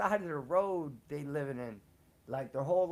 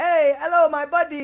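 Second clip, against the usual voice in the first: very high, very loud put-on Indian accent; 10 semitones higher, 14 dB louder than usual. Speaker imitates her son greeting people: imitating son's put-on Indian accent. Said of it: "my son even does the accent".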